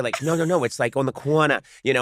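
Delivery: play-acted, fed-up, exasperated Boston accent. Recalling being coached on an accent, imitating Rachel Dratch getting frustrated. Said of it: "she was getting really frustrated".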